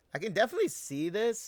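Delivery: very high voice breaking up and cracking. Speaker explaining a game's new feature, voice cracking. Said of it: "my voice just cracked".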